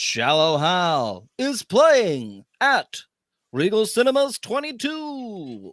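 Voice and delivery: automated-sounding announcer read. Saying who someone sounded like, then doing the Moviefone guy impression. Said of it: "sounded like the movie phone guy".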